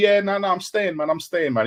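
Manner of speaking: put-on, insistent, repeated over-and-over delivery. Imitating the other speaker's hypothetical reply to a rival's offer: mock insistent denial. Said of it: "you'd be telling me".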